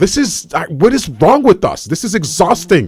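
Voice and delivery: getting worked up, audibly upset, emotional. Venting that people ignore warnings about disease: getting emotional. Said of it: "I'm gonna get emotional".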